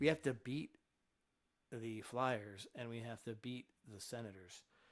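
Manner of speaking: soft, calm radio-style voice. Speaking into a microphone, easing off the emphasis on purpose: softened voice. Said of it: "I kind of softened that a little bit".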